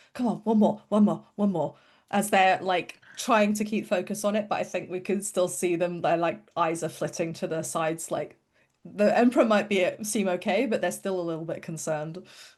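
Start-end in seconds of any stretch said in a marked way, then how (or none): 0.1-1.7 muttering under breath. Game player voicing their character, trying to keep focus, muttering to themselves. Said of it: "Moxie kind of mutters to themselves like".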